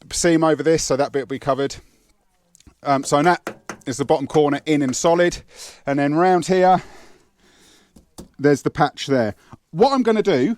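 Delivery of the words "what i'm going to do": loud shout, pitched up. Explaining a car boot repair into a microphone, shouting. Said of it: "I don't know why I'm shouting".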